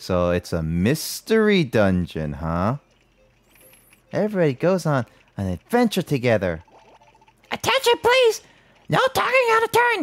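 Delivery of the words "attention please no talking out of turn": very high calling voice, going way up. Voicing the teacher in the game dialogue: Toad voice. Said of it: "I'm making Slowly turn into Toad".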